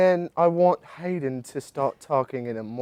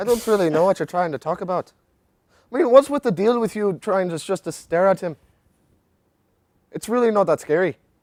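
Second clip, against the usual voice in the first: put-on Irish accent; 6 semitones higher than usual. Asked by another speaker to do his irish voice, irish accent. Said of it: "let's hear your Irish voice".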